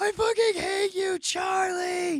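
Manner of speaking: very high, very loud, shrill, drawn-out shriek. Retelling what a boy in the park screamed: imitating someone screaming. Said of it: "he was just screaming at the top of his lungs".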